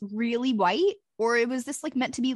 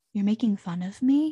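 slow, sad, wounded, like a kicked puppy; 2 semitones lower than usual. Retelling an actor's line from a movie scene: imitating a sad, hurt line. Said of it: "he sounds so sad, like a kicked puppy".

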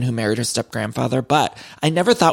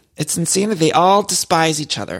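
plain

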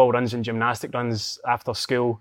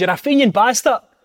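shrill, very high, loud jeering heckle; 11 semitones higher, 8 dB louder than usual. Retelling a story of a Hearts fan shouting at him after a game: imitating a heckling Hearts fan. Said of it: "He says".

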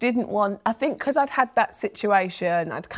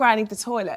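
ordinary talk

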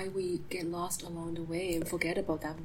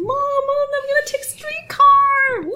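put-on shrill, very loud, thrilled little kid voice; 16 dB louder than usual. Retelling a little kid's words while waiting for a streetcar: imitating an excited kid. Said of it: "he was so excited".

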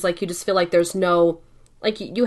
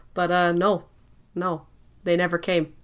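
plain

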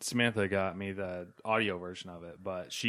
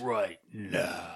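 growling voice with a grainy edge. Imitating a presenter at a press conference: imitating a grainy, growly voice. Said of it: "grainy, growly voice".

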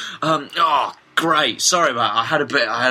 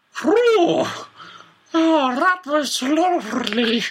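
very high, very slow, drawn-out underwater eunuch creature voice; 14 semitones higher than usual. Voicing a creature who has just eaten bagels: underwater eunuch voice. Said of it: "he sounds like a sort of underwater eunuch".

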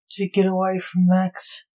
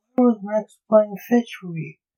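ordinary delivery

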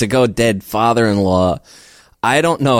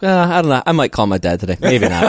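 put-on breezy, offhand, take-it-for-granted nonchalant tone. Imitating their own past remarks about calling a dad: imitating a nonchalant tone. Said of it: "just so nonchalant".

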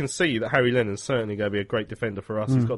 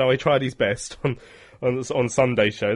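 usual speaking voice

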